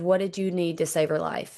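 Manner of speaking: ordinary delivery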